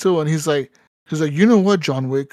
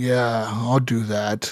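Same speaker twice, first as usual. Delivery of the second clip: expressionless, flat, deep, very slow deadpan monotone; 6 semitones lower, 3 dB quieter than usual. Retelling how Keanu Reeves says his movie lines: imitating Keanu Reeves with no expression. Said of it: "with no expression".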